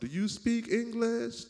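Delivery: mock screeching shout, very high and loud. Retelling how one man walks up to another man, retelling screaming aloud. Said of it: "screaming aloud".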